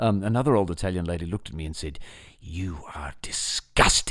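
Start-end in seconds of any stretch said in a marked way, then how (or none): 2.4-4.1 furious, really angry whisper. Retelling what an old italian lady said to them: imitating a really angry tone. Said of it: "in a really angry tone".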